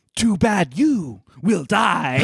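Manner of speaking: halting, badly paced, slow, stilted, pause-broken delivery. Describing a favorite movie scene, the speaker quotes the queen's stilted delivery with pauses. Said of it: "In that inflection".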